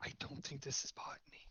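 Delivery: soft, hushed, leaning-in whisper. Voicing a character leaning down the bar to a classmate: whispering. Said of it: "lean down the bar and whisper".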